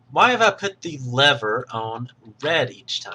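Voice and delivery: ordinary talk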